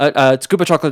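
put-on loud, nervous, stammering child voice.

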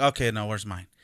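ordinary talk

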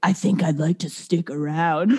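low, demonic, possessed-sounding voice. Retelling what she said while sleepwalking, in a possessed voice. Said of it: "it was like a possessed voice".

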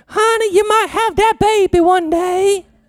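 put-on old granny voice in a very high pitch. Retelling what a grandmother told her granddaughters, in an attempted granny voice. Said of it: "I can't even make a granny voice".

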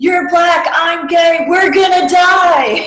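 very high, loud yell, "die" stretched out. Describing a movie chase scene, speaker acts out a character's line: retelling a yell. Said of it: "he literally yells out".

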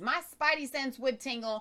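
normal talking voice

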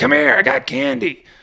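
play-acted, very high, scratchy, rough yelling. Retelling a man calling to them from across the street: imitating someone yelling. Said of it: "this guy kept yelling".

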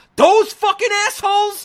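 shrill, very high, loud screamed outburst. Retelling a short film scene where the director character screams: imitating a character screaming. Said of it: "he screams".

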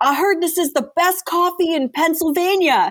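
big brash booming voice. Retelling a man in a tracksuit rolling into a coffee shop, imitating a loud voice. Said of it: "like loud voice".

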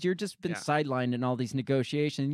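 ordinary talk

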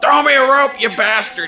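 high-pitched shrill yell. A player's character, stuck down a dark shaft, calls up to Kadeem, yelling. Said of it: "I yell".

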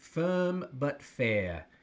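put-on British English accent. Quoting what a mentor used to say, English accent. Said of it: "in his English accent".

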